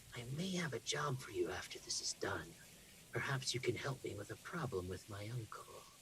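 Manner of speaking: hushed, very quiet whisper. The narrator voices a man leaning over to a player's ear, whispering. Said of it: "and whispers in your ear".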